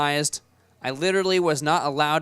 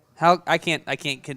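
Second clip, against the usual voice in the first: plain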